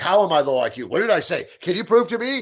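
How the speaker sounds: high, arguing, protesting, talking-back tone. Retelling how trolls argue back: imitating an arguing troll. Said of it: "They're like".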